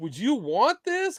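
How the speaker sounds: mock half-disgusted tone. Retelling how a guy offered him something, in a mock half-disgusted tone. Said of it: "Kind of like almost half disgusted".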